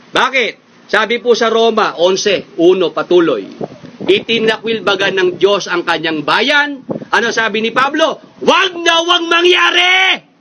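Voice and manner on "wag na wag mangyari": wag na wag stressed firmly, with strong emphasis. Quoting Paul's answer from Romans eleven: strong emphasis, not angry. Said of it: "Hindi ho ako galit, ha? Emphasis lang yon".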